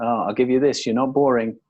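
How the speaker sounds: ordinary delivery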